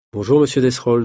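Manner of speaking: plain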